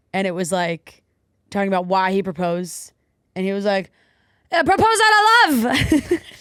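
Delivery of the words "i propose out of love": high, shrill, loud yell, all one word. Quoting a memorable moment of his in the park, retelling a yell. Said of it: "when he was yelling in the park".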